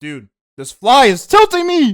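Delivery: shrill, very high, loud, swooping outburst. Reviewing character designs, the speaker yells about a fly, yelling. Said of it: "Sorry for yelling".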